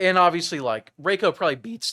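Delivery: voice breaking mid-sentence. Analyzing fighting-game matchups when the voice suddenly cracks. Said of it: "whoa the voice crack voice crack action".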